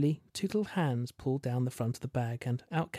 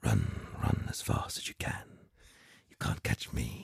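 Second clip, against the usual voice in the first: rough, gravel-toned, gravelly voice; 4 dB quieter than usual. Reading a story, a voice plays from a cassette tape: gravelly voice. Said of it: "a gravelly voice permitted from the player's speakers".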